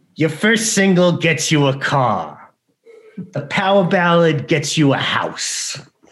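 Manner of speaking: drawn out slow and high. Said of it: "Tom also does the voice".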